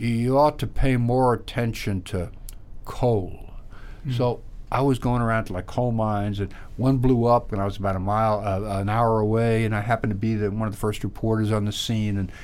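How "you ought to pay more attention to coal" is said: very slow, much slower, drawn-out speech. A reporter retells advice a man once gave him, quoting him very slowly. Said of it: "talk very slowly".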